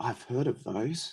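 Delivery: hushed, wondering tone. Reading a story, Ron reacts to Harry's unwrapped gift in a hushed voice. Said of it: "he said in a hushed voice".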